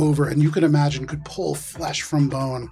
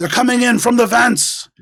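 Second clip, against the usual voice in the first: loud, high-pitched shouting; 8 semitones higher, 6 dB louder than usual. A game master voices a henchman inside the machinery, shouting. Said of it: "just shouts".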